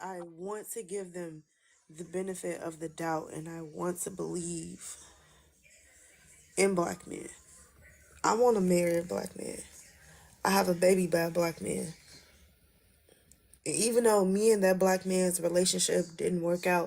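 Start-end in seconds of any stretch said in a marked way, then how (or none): 0.0-11.9 tearful voice, fighting back tears. Speaker talks about her daughter's father, holding back tears. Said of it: "I'm not gonna cry".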